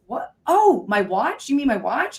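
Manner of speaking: surprised, startled, caught-off-guard blurt. Retelling being confronted face to face by an angry man, acting out own startled reply. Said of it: "I was startled".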